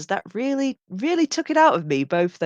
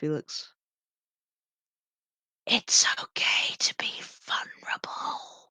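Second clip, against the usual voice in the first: grudging, soft, breathy whisper; 4 semitones lower, 7 dB quieter than usual. Going up to Felix and speaking to him, whispering. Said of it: "just sort of whisper to you".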